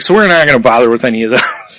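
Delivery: normal talking voice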